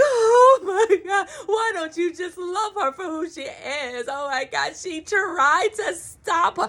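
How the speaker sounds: put-on, high boo-hooing cry-talk through tears. Retelling own reaction while watching the show: imitating own crying. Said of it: "I was in here boo-hooing".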